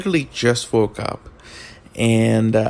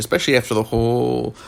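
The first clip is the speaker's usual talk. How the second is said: usual speaking voice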